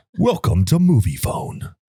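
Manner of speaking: put-on radio announcer voice. Showing off one's radio voice with a greeting, put-on radio voice. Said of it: "This is my radio voice".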